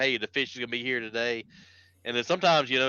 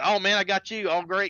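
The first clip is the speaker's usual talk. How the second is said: excited, thrilled, higher-pitched exclamatory tone; 8 semitones higher than usual. Retelling a guy who drew him a second time: imitating someone all excited. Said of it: "he's, like, all excited".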